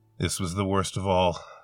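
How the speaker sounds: ordinary delivery, nothing marked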